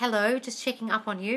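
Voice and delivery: put-on businesslike, by-the-book, dry, formal tone. Acting out a call from the specific person: imitating a dry formal tone. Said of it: "it's dry and it's formal".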